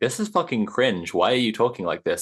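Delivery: ordinary talk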